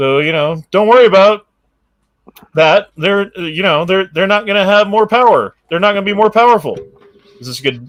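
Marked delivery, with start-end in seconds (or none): 0.0-6.8 loud voice, tripping over repeated words. Reading out a quote from the president: Biden impression. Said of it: "Is this a good Biden?".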